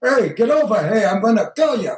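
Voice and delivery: put-on tough Brooklyn accent. Actor retells a scripted scene, playing the tough Brooklyn killer voice. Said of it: "I'm a killer, tough Brooklyn".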